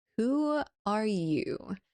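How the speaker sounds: drowsy, lazy, languid sleepy voice. Reading the story aloud, the Caterpillar first addresses Alice: languid, sleepy Caterpillar voice. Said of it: "addressed her in a languid, sleepy voice".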